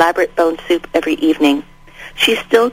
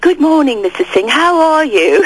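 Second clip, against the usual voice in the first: high, faked British accent; 9 semitones higher than usual. Retelling greeting a woman during first days there, in a fake british accent. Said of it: "speak with a British accent".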